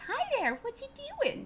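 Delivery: put-on very high, squeaky baby talk pet voice. Showing how people talk to a cat jumping into their lap, high-pitched voice for pets. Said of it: "like the high pitched voice".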